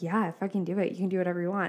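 usual speaking voice

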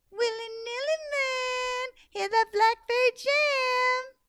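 very high, sugar-sweet voice. Reading a story where a mad character speaks sweetly: sweetest voice. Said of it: "she found the sweetest voice she could find".

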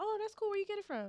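high, eager, impressed, dazzled voice.

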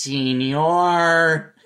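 put-on cartoon mouse voice. Showing how Speedy Gonzalez's cousin talked, in a Slowpoke Jose voice. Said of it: "he talked like this".

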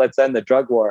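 ordinary delivery

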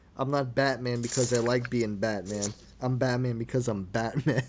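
ordinary delivery

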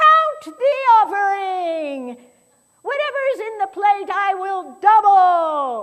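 loud, slow, deliberate shout, doubly drawn out. Telling a church story, the speaker imitates a woman who stands up and shouts. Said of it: "this woman stands up and shouts".

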